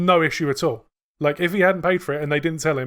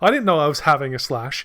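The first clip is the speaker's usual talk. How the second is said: ordinary talk, nothing marked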